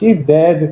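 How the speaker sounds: weak, pitiful, whimpering whine. Describing their game character waddling back to the desk, whimpering. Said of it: "just sort of whimpers out".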